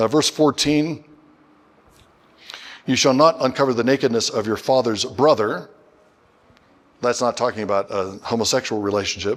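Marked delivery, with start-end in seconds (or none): none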